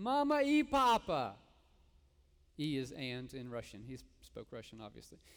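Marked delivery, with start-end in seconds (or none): 0.0-1.3 piercing shriek, very high-pitched and very loud. Recounting their boy running out the door to them, retelling a scream. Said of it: "and he screams".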